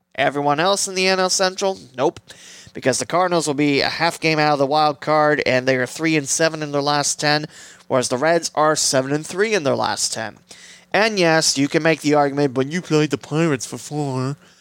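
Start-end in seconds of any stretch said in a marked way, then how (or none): 12.5-14.4 silly, mocking put-on voice. Voicing an imagined objection from a doubter, put-on mocking voice. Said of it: "I don't know why I did that voice".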